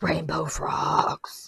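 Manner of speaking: throaty frog-like voice. Repeating a suggested title while voice has gone froggy and throaty. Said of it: "I had a froggy voice there".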